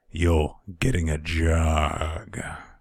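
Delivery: mock slow, drawling voice.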